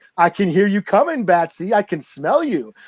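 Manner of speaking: goading, baiting, taunting villainous tone. Retelling a story scene, imitating the Joker taunting Batman. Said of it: "talking shit to Batman".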